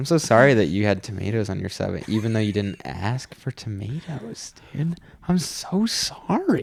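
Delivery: put-on slow, peaceful, calm voice. Retelling answering a yelling customer: imitating own slow, peaceful voice. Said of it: "I just came at her with this slow, peaceful".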